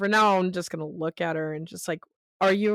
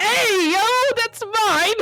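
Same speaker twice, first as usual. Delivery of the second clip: put-on girly voice, higher and louder; 7 dB louder than usual. Retelling a player's reaction at the table: Elon's girliest voice. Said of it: "Elon in his girliest voice is like".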